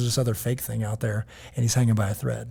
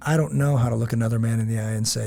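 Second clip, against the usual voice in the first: normal talking voice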